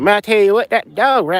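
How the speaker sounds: high-pitched Florida hillbilly accent. Speaker demonstrating a Florida redneck character based on someone they met, hillbilly accent. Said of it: "that's the hillbilly accent".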